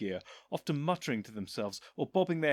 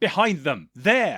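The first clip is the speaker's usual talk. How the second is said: very loud, impatient, fed-up shout; 11 dB louder than usual. Reading a story aloud, the Doctor pointing something out: impatient. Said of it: "he said impatiently".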